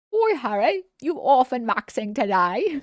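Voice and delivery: terrible fake British accent. Quoting British people, terrible put-on British accent. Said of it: "that's such a terrible British accent".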